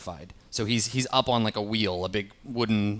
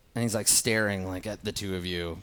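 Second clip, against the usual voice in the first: ordinary talk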